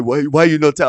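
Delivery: acted-out angry, scolding, blaming tone. Retelling a complaint from the one in charge: imitating someone getting mad. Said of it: "he gets all mad at me".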